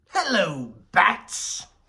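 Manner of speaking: big, high, swooping, sing-song villain voice. Comparing voice actors, the speaker shifts into a Mark Hamill voice. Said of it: "kind of going into more of the Mark Hamill thing".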